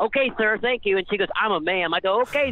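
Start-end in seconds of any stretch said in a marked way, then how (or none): 0.0-1.0 pitched-up, mocking, overly polite, sarcastic tone. Retelling his reply to a rude worker who called him wheelchair guy: retelling a mock-polite reply. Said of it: "mocking reply to rude worker".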